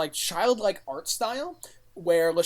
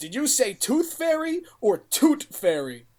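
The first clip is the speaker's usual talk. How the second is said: put-on New York accent, pitched up; 7 semitones higher, 4 dB louder than usual. Retelling a scene where the fairy character answers, in a New York accent. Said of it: "with his pompadour and like New York style accent".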